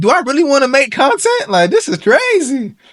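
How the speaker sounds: high, exasperated, fed-up wail.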